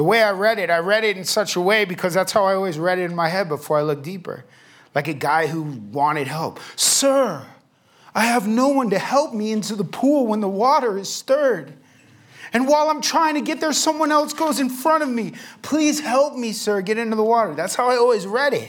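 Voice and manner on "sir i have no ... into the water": play-acted whiny, high, whining, pleading tone. Speaker reads a man's plea for help as he imagines it, mock-whining plea. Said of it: "He whines".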